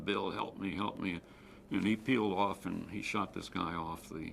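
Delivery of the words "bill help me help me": usual speaking voice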